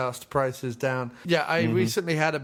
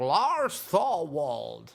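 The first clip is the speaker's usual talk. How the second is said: animated, swooping, wide-pitch classic movie-star voice. Quoting a line from Rear Window: Jimmy Stewart impression. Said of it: "in Rear Window, obviously, where he's like".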